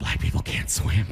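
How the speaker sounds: unvoiced, secretive whisper.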